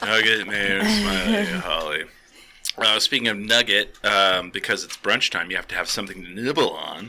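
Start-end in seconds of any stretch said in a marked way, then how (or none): 0.0-2.0 half-hearted, acted out, very high and swooping. Retelling own earlier reading of a list: imitating own unenthusiastic reading. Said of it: "he said it with more enthusiasm than I gave it credit for".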